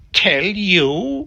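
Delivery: sudden shrill jump, you drawn out. A witch retorts when asked about the deep magic: suddenly shriller voice. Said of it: "her voice growing suddenly shriller".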